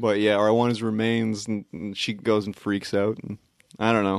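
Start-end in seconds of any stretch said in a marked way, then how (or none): none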